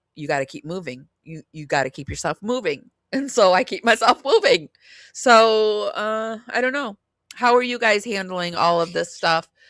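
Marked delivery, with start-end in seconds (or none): 0.2-2.9 steady, quick, calm, reassuring and encouraging voice. Retelling what a voice said to Amy, imitating a calm encouraging voice. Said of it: "it's a very encouraging, very like".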